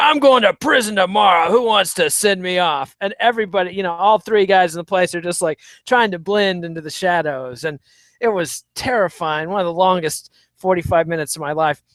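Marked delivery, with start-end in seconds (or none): 0.0-3.0 put-on loud, thundering, booming bellow. Retelling how a man at the bar thundered at everyone, loud booming voice. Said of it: "this dude thunders down. He's like".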